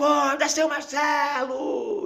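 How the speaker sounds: high-pitched yell. Retelling how a nurse woke him, imitating a nurse shouting. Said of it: "Dando grito".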